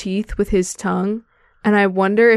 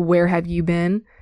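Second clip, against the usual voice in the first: put-on angry voice, lower; 3 semitones lower than usual. Retelling a scene from the book, imitating Darry saying it angrily. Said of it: "kinda says more angry, like".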